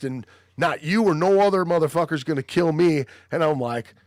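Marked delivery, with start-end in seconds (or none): 0.6-3.0 all-out, raw screaming. Retelling a stranger at a bar showing his scar: imitating someone screaming. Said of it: "he's screaming about how he got stabbed".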